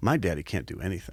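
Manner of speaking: put-on muttering under the breath. Father retelling what his daughter said to herself, imitating muttering under breath. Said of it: "under her breath to herself".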